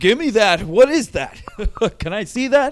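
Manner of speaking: playful, jokey teasing, loud and high-pitched. Retelling a comedian grabbing a walkie-talkie: imitating a comedian being funny. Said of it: "being funny".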